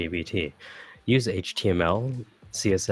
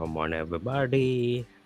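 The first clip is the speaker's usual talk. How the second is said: fake, put-on Indian accent; 3 semitones higher than usual. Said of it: "I use an Indian accent when I do computer things".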